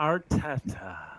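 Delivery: quiet, disdainful tone. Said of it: "the disdain he had in his voice".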